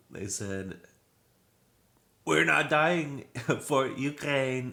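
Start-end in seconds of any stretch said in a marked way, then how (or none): 2.3-4.8 bad French accent, raised and high pitch. Quoting protesters from a news story: bad french accent. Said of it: "I can't do a good, uh, French guy accent".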